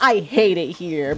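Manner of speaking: play-acted sunny, chipper voice, very slow and drawn out. Describing a coworker's recorded button message, the speaker does a mock-chipper 'I hate it here'. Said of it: "very chipper".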